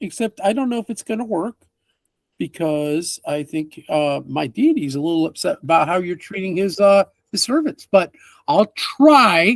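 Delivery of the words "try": try leaned on hard, overdone heavy stress. A character answers a request for healing, stressing the word try. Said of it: "He overemphasizes the try word".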